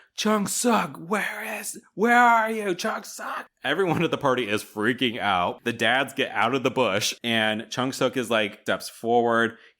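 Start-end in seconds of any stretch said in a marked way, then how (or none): 0.2-3.5 frantic, very high-pitched shout. Retelling a movie scene where a character searches for someone: imitating someone shouting. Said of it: "Mister Peaches is shouting".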